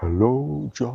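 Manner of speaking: mock grand, booming voice. Retelling what a tree said to him, in a big booming voice. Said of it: "in this big booming voice".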